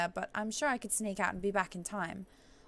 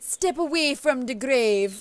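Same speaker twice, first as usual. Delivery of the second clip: loud, bad, put-on Jamaican accent; 4 semitones higher, 10 dB louder than usual. Voicing a witch doctor character: Diablo III witch doctor Jamaican accent. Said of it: "I'm gonna try and shoot for a Jamaican accent".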